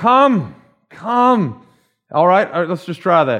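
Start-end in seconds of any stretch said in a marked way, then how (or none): 0.0-1.7 acted-out high calling cry. Speaker retelling how his friend cried out to people during his altar call: retelling a cry out. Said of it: "He would cry out to people".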